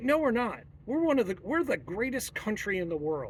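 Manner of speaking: normal talking voice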